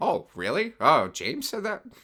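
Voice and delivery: high-pitched voice with big pitch swoops. Imagining the reply to an email about a movie ranking: Martin Scorsese impression. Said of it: "That was a very good Martin Scorsese".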